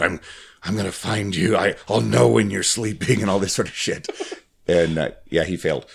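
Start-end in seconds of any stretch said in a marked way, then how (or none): 0.0-3.2 serious, solemn, dead straight delivery. Retelling a video of Liam Neeson auditioning to be Santa: serious Liam Neeson voice. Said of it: "He's all serious".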